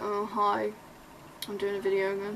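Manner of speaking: bored, flat, low-energy, unexcited delivery. Showing a boring video intro that makes people click off, bored. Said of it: "if you sat here like, ... that is so boring".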